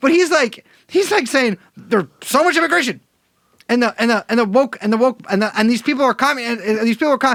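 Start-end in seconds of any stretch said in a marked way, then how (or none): 1.8-7.4 mock rapid rambling, pitched higher. Mocking someone's talk about immigration: imitating someone rambling fast. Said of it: "his brain is moving so fast, and he just talks like".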